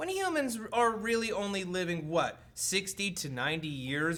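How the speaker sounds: ordinary delivery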